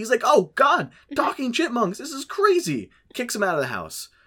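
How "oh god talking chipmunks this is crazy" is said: very high, panicky outburst, acted out. Retelling a film scene where Dave first sees chipmunks: imitating Dave freaking out. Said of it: "he freaks out".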